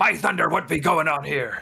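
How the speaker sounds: loud, high-pitched bellowing voice. Voicing Magnus as he plows into the room: voicing Magnus. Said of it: "you hear a voice that says".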